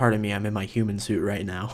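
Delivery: ordinary talk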